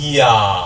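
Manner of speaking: slow, drawn-out 이야, 이 gliding into 아. Pronunciation lesson, saying the sound slowly to hear it: drawn-out 이야. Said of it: "요걸 길게 발음하면 처음에는 이로 시작했다고 아로 끝나는 느낌이거든요".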